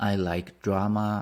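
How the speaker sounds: ordinary delivery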